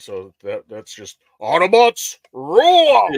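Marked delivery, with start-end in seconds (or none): 1.4-3.1 big, loud calling-out voice. Doing a one-line impersonation: Optimus Prime impression. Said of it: "I have several one-line impersonations".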